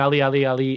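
normal talking voice

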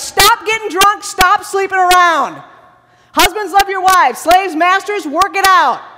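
loud, high-pitched, blunt scolding yell. Describing how he yells at the Ephesians, imitating someone yelling. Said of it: "When he's yelling at the Ephesians".

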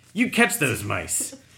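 very loud, menacing, threatening tone. Describing a comic strip aloud, reading a character's line: menacing. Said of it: "he looks really menacing and says".

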